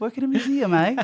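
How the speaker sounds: bad fake English accent. Bantering with a co-host about the show: bad put-on english accent. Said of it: "This is his accent in the show".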